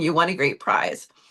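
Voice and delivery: ordinary talk, nothing marked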